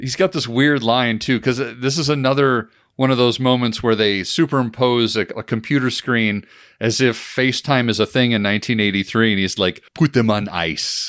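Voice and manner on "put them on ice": put-on low voice, heavy German villain accent. Recounting a film scene, doing Largo's line in his German accent. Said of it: "in his very Largo German accent".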